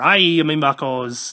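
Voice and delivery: put-on swashbuckling pirate voice. Reviewing a figure, suddenly slipping into a pirate voice. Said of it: "Now I'm sounding like a pirate".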